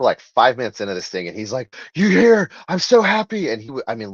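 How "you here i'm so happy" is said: breathless, very high, drawn-out gasping voice. Retelling a super fan bursting in at a signing: imitating someone out of breath. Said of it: "legitimately out of breath".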